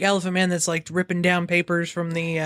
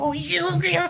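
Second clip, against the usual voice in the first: whiny, very high-pitched angry voice; 12 semitones higher than usual. Imagining Sakura reacting to the bounty: imitating Sakura super angry. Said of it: "imagine Sakura being, like, super angry and be like".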